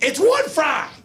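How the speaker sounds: put-on shrill, very high yell, shouted upward. Speaker recounts yelling up the stairs over a fry, retelling a yell. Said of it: "I'm yelling up as I go up the stairs".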